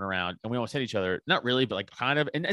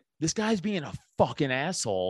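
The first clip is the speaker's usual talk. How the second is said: re-enacted shout; 4 semitones higher than usual. Recounting a confrontation, quoting what the speaker yelled at a guy: retelling yelling. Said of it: "as I'm like yelling at this guy".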